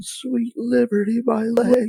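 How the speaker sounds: very high screamed cry of pain. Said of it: "and you'll scream".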